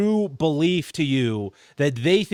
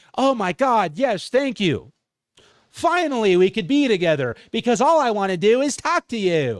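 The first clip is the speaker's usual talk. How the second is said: gushing, all-eager AI voice; 5 semitones higher than usual. Mocking how a language model answers someone leaving their family, imitating an AI talking. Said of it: "That's how A I talks".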